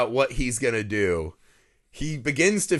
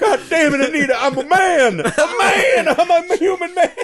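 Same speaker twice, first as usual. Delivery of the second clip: acted-out scream, higher and louder; 9 dB louder than usual. Quoting a husband's outburst at his wife: imitating a character screaming. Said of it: "he's just screaming to the gods".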